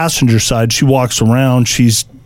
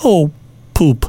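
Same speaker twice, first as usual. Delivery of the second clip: put-on, sugary, dainty, sweetest little voice; 3 semitones higher than usual. Retelling what a woman said when her card would not come back, imitating sweetest little voice. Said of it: "she says in the sweetest, nicest little voice".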